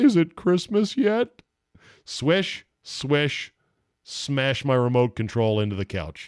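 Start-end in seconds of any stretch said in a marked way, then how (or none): 0.0-1.4 sad mumbling, pitched way up. Mumbling to oneself after a free-throw remark on TV: mock-sad Homer voice mumble. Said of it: "In my sad Homer voice, I mumbled to myself".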